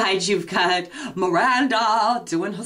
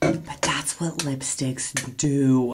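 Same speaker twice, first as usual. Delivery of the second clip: low, slow half-whisper; 6 semitones lower than usual. Wrapping up a video for viewers, half-whispering an aside.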